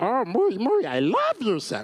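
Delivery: high, swooping sing-song voice. Retelling the table reading, saying the first lines as Jar Jar: Jar Jar voice. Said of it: "Jar Jar's first words happen".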